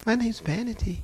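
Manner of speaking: put-on sweet, sugary, demure voice. Retelling a demon answering its name: imitating a sweet, demure voice. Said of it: "She sounded just as sweet and demure".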